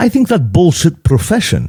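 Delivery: put-on Greek accent. Retelling a man's reply after hearing the speaker's past jobs: greek accent impression. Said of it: "my best Greek impression".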